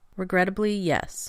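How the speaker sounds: ordinary delivery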